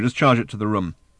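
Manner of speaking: plain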